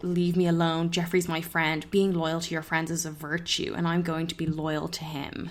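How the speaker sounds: ordinary talk, nothing marked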